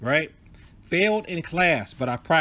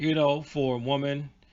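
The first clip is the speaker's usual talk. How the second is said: ordinary talk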